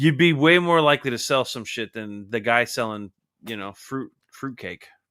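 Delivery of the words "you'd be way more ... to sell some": plain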